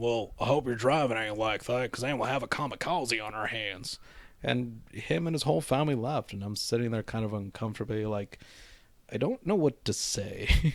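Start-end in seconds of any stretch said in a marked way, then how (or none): 0.0-4.0 rough, gruff male voice, joking. Retelling what a man said after the speaker's shades went around in circles, imitating a man's gruff voice. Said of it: "he had like a very gruff voice to him".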